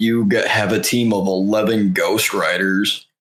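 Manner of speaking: plain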